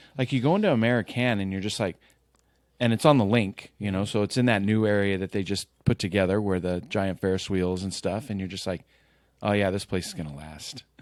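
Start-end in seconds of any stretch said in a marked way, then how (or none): 9.4-10.9 dry, lightly sarcastic, mock-sure tone. Retelling a past thought about a new bar: imitating own sarcastic remark. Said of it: "Kinda sarcastically".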